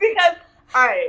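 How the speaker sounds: high, teary laughing through tears.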